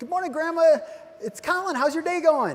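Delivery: eager, bright, excited, high voice. Showing how to greet a caller as if calling grandma: excited greeting. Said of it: "I'm excited when I talk to my grandma".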